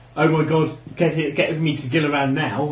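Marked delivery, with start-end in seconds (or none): none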